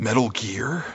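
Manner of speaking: gritty-edged soldier hero voice. Reading a listener's line after the other speaker flubbed it: Solid Snake impression. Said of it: "you do a better Solid Snake impression than I do".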